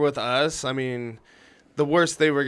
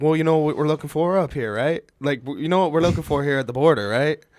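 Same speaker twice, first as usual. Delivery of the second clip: Canadian accent impression. Retelling what the border officer said when asked how he sounded: imitating a Canadian border officer. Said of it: "What did he sound like?".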